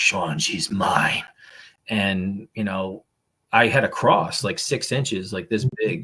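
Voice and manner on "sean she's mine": deep, dark man's voice. Speaker retells a phone call where a young woman suddenly spoke: imitating a dark male voice. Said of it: "it's like a dark male voice".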